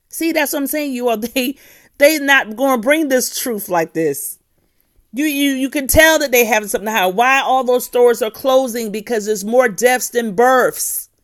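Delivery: high, loud, excited, worked-up ranting voice.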